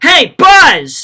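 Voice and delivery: very loud, high, shrill yell. Showing how you yell at the Buzz Lightyear toy: yelled. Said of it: "So when you yell at Buzz".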